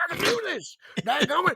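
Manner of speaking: very high put-on bumpkin voice. Imitating a cocky man on a hot streak, in a country bumpkin voice. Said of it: "I made him sound like a bumpkin".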